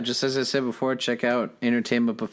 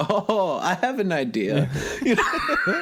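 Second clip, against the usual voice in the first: high, laughing put-on impression voice. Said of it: "That's my Tommy impression".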